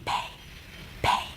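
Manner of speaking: very quiet, barely voiced whisper. Teaching pronunciation to Arabic speakers, demonstrating a word, whispered. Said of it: "I want you to whisper this word".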